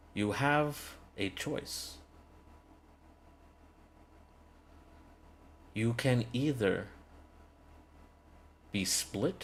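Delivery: solemn, weighty delivery. Narrator reading a woman's words as she offers the group a choice, much more serious tone. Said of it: "In a much more serious tone".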